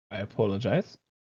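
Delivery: put-on proper British accent. Voicing the English character Daniel Graham while apologizing, in a proper Queen's English accent. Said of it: "as close as I can to the proper Queen's English accent".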